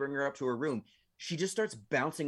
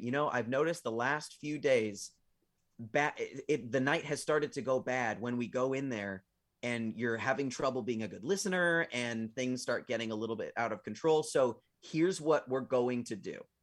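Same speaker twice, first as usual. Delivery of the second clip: usual speaking voice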